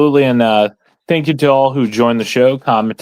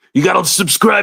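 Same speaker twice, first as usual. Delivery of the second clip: gruff, pitched-up put-on voice pushed out high; 7 semitones higher than usual. Telling viewers to subscribe and share, done as the Macho Man: Macho Man voice. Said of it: "in a famous voice you do".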